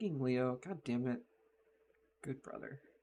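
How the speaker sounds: muttering under breath. Voicing a sister annoyed at leo, out of view: muttering under her breath. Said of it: "under her breath, she's like".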